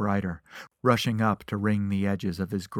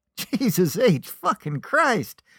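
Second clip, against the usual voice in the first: very slow, high, swooping, drawn-out hoot of laughter; 13 semitones higher, 5 dB louder than usual. The little man reads Marshall's paper and bursts out: hooting with laughter. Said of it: "he hooted".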